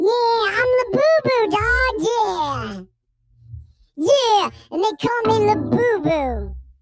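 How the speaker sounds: low, slow put-on mouse voice, yeah drawn out. Voicing the mouse who just handed over cheese: voicing a mouse. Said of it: "And he goes".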